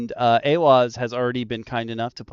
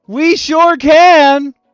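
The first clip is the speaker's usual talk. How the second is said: announcer voice, much higher and louder; 11 dB louder than usual. Answering the other speaker's question, slipping into an announcer voice. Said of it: "that was my announcer voice".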